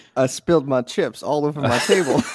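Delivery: sudden put-on southern US accent. Answering when asked if they're all right, in a southern accent. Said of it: "why did you like turn southern or something?".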